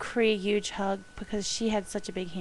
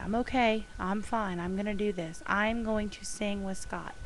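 ordinary delivery

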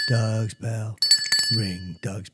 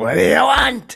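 mock angry voice, higher and louder; 13 semitones higher, 8 dB louder than usual. Retelling what he said, imitating Pacino mad. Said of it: "Pacino, I, I used to do mad".

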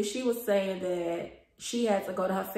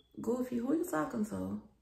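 cool, calm, quiet, really stern voice; 4 semitones higher, 5 dB quieter than usual. Retelling confronting someone in front of a whole classroom; retelling a calm, stern question. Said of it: "I was calm and like real stern".

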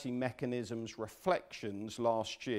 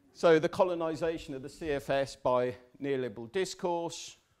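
plain

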